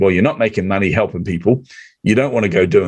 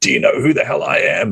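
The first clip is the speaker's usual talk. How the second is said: mock indignant, seething, furious, outraged outburst; 3 semitones higher than usual. Retelling how someone reacted to a stopped episode: imitating someone angry. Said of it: "He was so angry with me".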